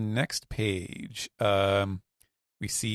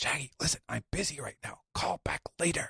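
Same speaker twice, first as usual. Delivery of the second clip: hushed, pitched-up, quiet, dismissive, busy-sounding delivery; 6 semitones higher, 5 dB quieter than usual. Recounting Loki taking an ill-timed call from Shaggy: Loki's hushed quiet voice. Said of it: "down down in his quiet voice".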